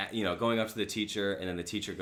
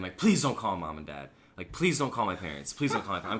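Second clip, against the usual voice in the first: mock childlike pleading, faster; 4 dB louder than usual. Retelling being in the principal's office as a crying child: retelling childhood begging. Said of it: "I'm literally begging the principal".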